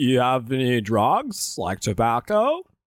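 dopey, dim-witted, swooping, sing-song character voice. On a podcast, a host plays an ATF agent questioning someone, Idiocracy voice. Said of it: "You're doing your fucking Idiocracy voice again".

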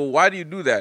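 plain

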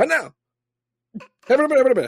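shrill, booming, hyped announcer voice, very high and loud. Showing how a famous speaker talks: Barack Obama impression. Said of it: "it's like Barack Obama. He's like".

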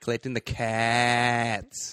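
put-on full Australian accent, stretched cats. Repeating a movie character's line: Australian accent as Judy. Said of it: "Everyone's super Aussie in this movie".

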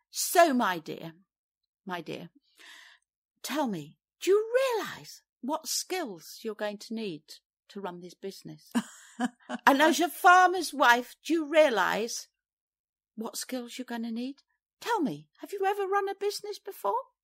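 patronising, talking-down, swooping sing-song tone. Retelling what a Business Link visitor said in her kitchen, mimicking a condescending man. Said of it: "he condescendingly said".

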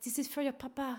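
put-on seductive, soft, sultry French accent. Retelling a farewell, quoting a woman giving you chocolates, in a sexy French accent. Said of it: "in her most sexiest French accent".

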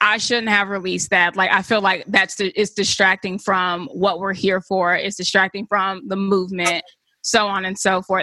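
normal talking voice

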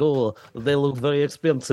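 put-on, vague Eastern European accent. Recalling a woman whose number they got in Boston, voicing her in an unidentified put-on accent. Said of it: "I don't know what accent that is".

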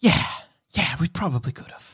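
quick delivery, sighing heavily throughout. Narrator voicing a limping character who slumps down, with a heaving sigh. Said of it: "With a heaving sigh, he says".

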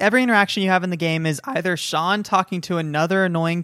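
ordinary delivery

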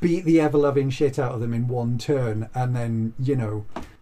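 normal talking voice

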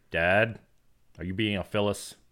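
ordinary talk

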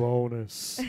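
deep voice. Saying the show's bonus greeting back and forth: low voice. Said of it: "I was trying to do low".

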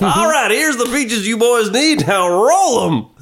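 very high, goofy, put-on Southern accent. Doing the props guy as a goofy southerner: goofy southern voice. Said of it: "that goofy Southerner".

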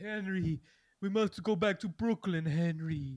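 loud, really husky put-on voice. Mocking how she talks, imitating a really husky voice. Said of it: "She's just doing like a really husky voice".

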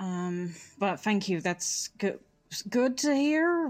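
slightly conflicted tone. Player voices a character answering the others, slightly conflicted. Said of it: "he says in a slightly conflicted voice".

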